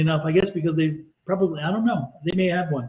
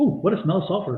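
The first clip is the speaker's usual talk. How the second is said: ordinary delivery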